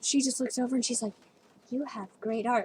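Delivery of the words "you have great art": put-on creepy child voice, much quieter. Retelling what a girl said on first meeting, creepy child voice. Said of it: "like in this kind of creepy child voice".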